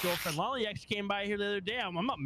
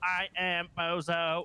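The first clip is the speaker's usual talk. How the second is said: nineties text-to-speech robot computer voice. Mocking another speaker's voice: imitating a nineties text-to-speech robot. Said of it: "nineties robots trying to do".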